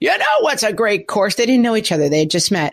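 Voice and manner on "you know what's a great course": oblivious, chummy, brash and chatty bro voice. Retelling two strangers talking golf on a silent plane: imitating loud talking. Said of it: "talking at the top of their voice".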